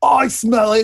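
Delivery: screamed words. Voicing a second unseen stranger on a stopped wagon: screaming. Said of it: "another voice scream out".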